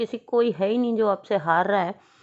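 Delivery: ordinary talk, nothing marked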